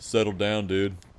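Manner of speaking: surfer dude voice, beach-bum style talk. Playing Sephiroth as Cloud checks on his troops, in a surfer-boy Sephiroth voice. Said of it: "give Sephiroth the surfer boy voice".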